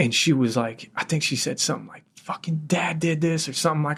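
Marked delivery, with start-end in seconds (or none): 2.2-3.5 put-on curdling sobs, trembling voice through tears. Retelling what a woman said while hugging the speaker, imitating someone crying. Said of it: "her fucking curdling fucking cry".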